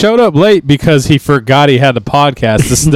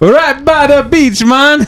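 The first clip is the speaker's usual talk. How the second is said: very high-pitched fake Jamaican accent; 12 semitones higher than usual. In a comedy bit, answering what part of Jamaica they're from, in a fake Jamaican accent. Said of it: "now I'm not talking like a Jamaican no more".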